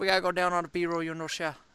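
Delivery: put-on Cajun accent. Showing how people talk down here: bad Cajun accent. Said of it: "That's that's like my bad Cajun".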